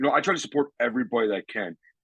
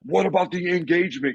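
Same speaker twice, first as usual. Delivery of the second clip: very angry, pitched-up outburst; 8 semitones higher than usual. Retelling getting shot in the head at the field: imitating own angry outburst. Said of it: "very, very angry".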